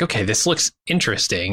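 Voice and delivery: ordinary talk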